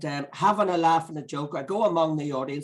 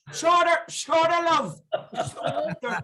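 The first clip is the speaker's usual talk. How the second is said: very high Northern Irish voice, slow and drawn out; 12 semitones higher than usual. Retelling what a woman said to her, in a Northern Irish accent. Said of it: "in the Northern Ireland accent".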